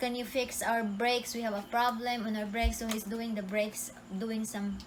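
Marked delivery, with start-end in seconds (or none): none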